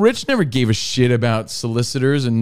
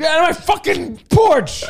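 put-on very high, drawn-out angry girl's yell. Imitating an angry girl chasing people off a porch: imitating an angry girl yelling. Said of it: "like that angry girl".

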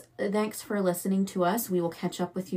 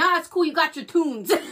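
put-on thick New Jersey / New York accent; 8 semitones higher, 6 dB louder than usual. Retelling a woman's reply to the speaker's apology, in a strong New Jersey accent. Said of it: "the most New Jersey, maybe New York accent I've ever heard".

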